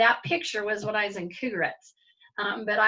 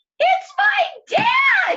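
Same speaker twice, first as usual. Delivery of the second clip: very high, shrill, very loud screaming yell; 9 dB louder than usual. Retelling seeing her father walk into the gym: retelling a scream. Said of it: "I just screamed out".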